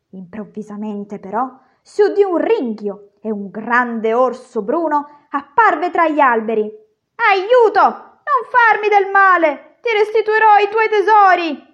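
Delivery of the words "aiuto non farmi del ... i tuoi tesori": high, panicked, terrified shouting cry. A dwarf cries out as a large bear appears among the trees, terrified shout. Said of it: "gridò terrorizzato il nanetto".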